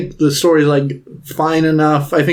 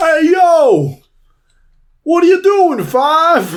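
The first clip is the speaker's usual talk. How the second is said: very high, raised put-on Brooklyn accent; 13 semitones higher, 3 dB louder than usual. Quoting a japanese dub's character addressing five: put-on brooklyn accent. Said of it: "put on a Brooklyn accent".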